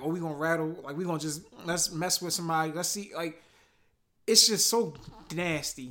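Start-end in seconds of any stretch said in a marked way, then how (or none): none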